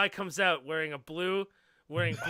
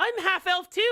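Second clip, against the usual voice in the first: put-on very high little girl voice; 6 dB louder than usual. Voicing a little half-elf girl greeting a half-elf player: voicing a little half-elf girl. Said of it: "She's like".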